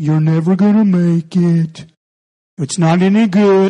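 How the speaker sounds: bad, mopey, sad donkey voice, drawn out. Quoting what the moping donkey always says, in a terrible Eeyore impression. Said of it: "That's a terrible Eeyore".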